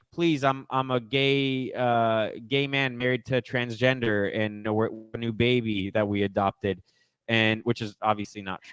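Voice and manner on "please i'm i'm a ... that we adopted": ordinary talk, nothing marked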